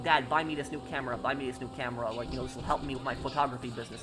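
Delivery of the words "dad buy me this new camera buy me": usual speaking voice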